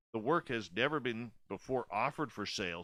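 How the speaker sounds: ordinary talk, nothing marked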